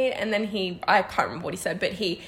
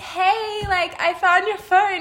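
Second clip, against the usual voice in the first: play-acted wobbly, off-kilter drunk voice, high and slow; 10 semitones higher, 4 dB louder than usual. Retelling what the other speaker said at the wedding: imitating a shaky drunk voice. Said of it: "your voice is so shaky and just off".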